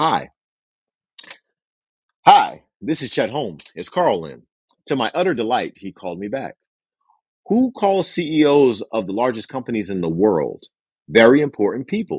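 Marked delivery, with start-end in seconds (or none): 0.0-4.4 play-acted, very authoritative, commanding, in-charge voice. Retelling a phone call to a bank chairman: retelling a very authoritative voice. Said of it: "calling with a very authoritative voice".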